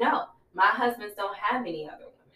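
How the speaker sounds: ordinary talk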